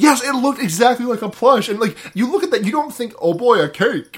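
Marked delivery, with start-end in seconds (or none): 3.2-4.2 slow, goofy, drawling cartoon bear voice. Joking about a gingerbread-man cake that looks like a plush, in a Yogi Bear voice. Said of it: "I like this voice you're doing".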